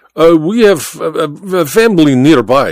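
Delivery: halting, stammering speech. A character answers a question about their stay, stammering. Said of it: "Baba stammered".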